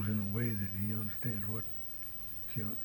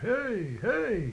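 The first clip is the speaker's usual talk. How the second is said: loud high-pitched call. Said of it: "I could go out there and just holler".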